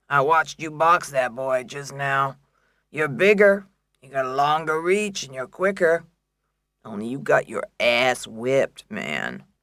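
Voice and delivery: coarse, grainy, rough gravelly speaking voice. Reading a boxing manager greeting a fighter: gravelly voice. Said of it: "Browning said in his gravelly voice".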